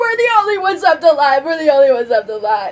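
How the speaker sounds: tearful, high, panicked sobbing. Acting out a quick scene, grabbing another character and shaking him, crying. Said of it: "And I'm gonna cry".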